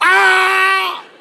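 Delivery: put-on high, loud child's tantrum scream.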